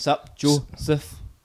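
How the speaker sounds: word split into separate, choppy syllables. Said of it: "that's like me going".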